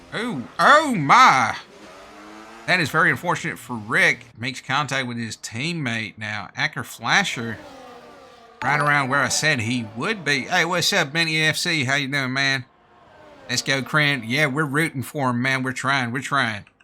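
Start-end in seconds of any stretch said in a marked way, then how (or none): 10.4-16.6 fake American accent, exceptionally badly done. A commentator greets someone and cheers a player on; exceptionally bad American accent. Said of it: "this isn't my usual accent. I'm doing American".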